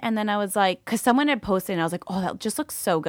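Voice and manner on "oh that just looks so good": ordinary talk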